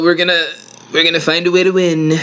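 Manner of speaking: quick, high-pitched, rattled-off rally-style inflection. Making a quick aside to show an inflection the speaker loves, Trump's voice inflection. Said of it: "I love this inflection that Trump does with his voice".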